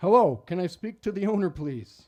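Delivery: polished, very loud, high telemarketer voice. Reading a job script aloud for a man, the speaker uses their best telemarketing voice. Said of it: "I asked in my best telemarketing voice".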